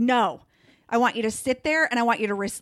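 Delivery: put-on, intense, insistent tone. Retelling what Andrea says when offered help: imitating Andrea's intense tone. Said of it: "she gets really, like, when she, intense".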